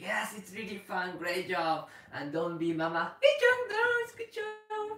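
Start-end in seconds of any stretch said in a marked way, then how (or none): 0.0-1.9 upbeat, fun, praising tone. Demonstrating what to tell the dog during the sport, telling the dog it's fun. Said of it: "So tell the dog".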